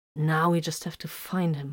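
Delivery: plain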